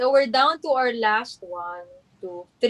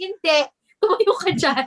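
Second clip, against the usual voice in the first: high, scolding voice. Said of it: "pinapagalitan ako".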